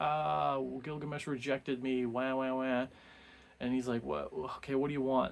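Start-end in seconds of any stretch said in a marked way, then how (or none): 0.0-2.9 whiny, sobbing, wailing crying voice. Retelling a myth, acting out Ishtar going to her father, imitating Ishtar wailing. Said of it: "she's just like wailing and screaming and crying".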